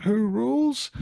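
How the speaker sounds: eerie, creepy, very high-pitched puppet voice. Retelling how Dave taunted Tony with a puppet, in a creepy high voice. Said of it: "in this kind of creepy high voice".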